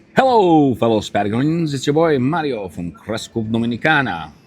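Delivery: put-on vampire accent. Opening a video greeting to fellow Patagonians, in a Count Dracula-like accent. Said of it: "Why are you doing that accent?".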